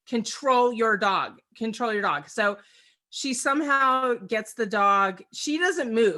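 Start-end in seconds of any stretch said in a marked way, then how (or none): none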